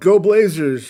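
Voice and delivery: loud, drawn-out yell. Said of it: "And I yell".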